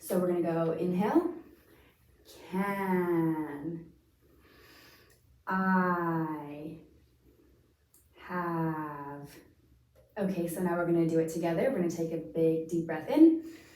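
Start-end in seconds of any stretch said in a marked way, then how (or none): 2.5-9.3 very slow, drawn out, easy onset. Demonstrating a breathing exercise, exhaling slowly with an easy onset, one word at a time: very slow. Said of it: "I'm gonna say the words very slowly".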